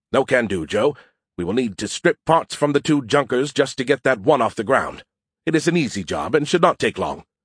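ordinary delivery

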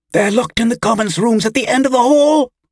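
very high, frightened, gasped-out voice. Reading a captive woman answering her knife-wielding captor, a gasped reply. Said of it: "the woman gasped".

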